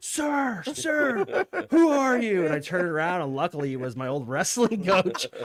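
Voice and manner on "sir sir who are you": very high, stretched, drawn-out screaming call. Retelling a man in a school hall: imitating someone screaming.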